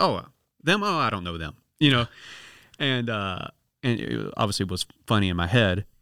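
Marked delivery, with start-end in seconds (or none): 0.0-1.6 mock, heavy, joking sarcasm with swooping tone. Retelling pretending not to know friends on a bus: imitating own past sarcasm. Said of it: "I sarcastically did that".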